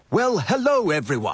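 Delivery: cheerful, sunny, chipper, bright voice. Arriving at family breakfast and greeting everyone, chipper. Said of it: "Someone sounds chipper".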